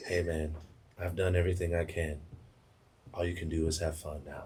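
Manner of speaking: very low, barely audible half-whisper, close-sounding. Retelling how a man came up behind him and spoke, half-whispering in his ear. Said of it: "He whispers in my ear just like this".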